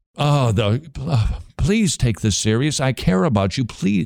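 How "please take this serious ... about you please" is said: put-on, earnest pleading voice. Showing how a soft-spoken witness sounds: imitating Ray Comfort pleading. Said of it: "but the pleading".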